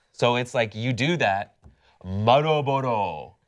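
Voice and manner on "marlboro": shoddy, bad put-on Japanese accent. Answering how to say brand names so locals understand: bad japanese accent. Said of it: "a shitty Japanese accent".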